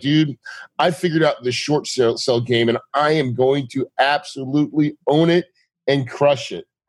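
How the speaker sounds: ordinary talk, nothing marked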